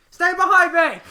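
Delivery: very high, very loud yelling. Yelling at a party member in character: yelling a command in character. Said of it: "I'm going to yell at Aster".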